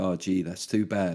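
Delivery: heavy, obvious sarcasm, low and muted. Retelling how he answered a journalist, retelling obvious sarcasm. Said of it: "But in an obviously sarky way".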